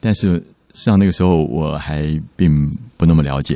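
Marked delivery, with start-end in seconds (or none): none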